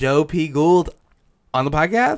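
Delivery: rising, question-like intonation.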